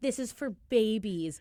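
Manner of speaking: mock bratty teenager voice, dismissive and drawn-out. Retelling how they complained as kids about seeing the show: imitating bratty complaining. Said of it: "we were s-, such brats about it".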